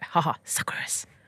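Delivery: soft, mocking, taunting whisper.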